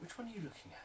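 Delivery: eager, curious tone.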